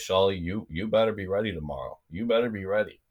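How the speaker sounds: put-on Russian accent. Retelling what he said from bed in the hotel that night, Russian accent. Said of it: "He goes in his in his Russian accent".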